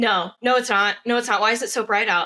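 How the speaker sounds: acted paranoid panicking. Retelling a character's bad trip: imitating Mark's paranoid panic. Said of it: "he is just hella paranoid".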